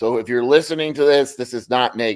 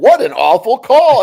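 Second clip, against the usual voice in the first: loud, drawn-out yelling; 9 semitones higher, 7 dB louder than usual. Describing a fan calling the game after a bad call: imitating a fan yelling. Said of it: "like he's yelling".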